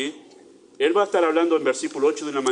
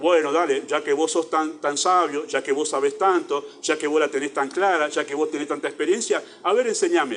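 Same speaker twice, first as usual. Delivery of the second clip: ordinary delivery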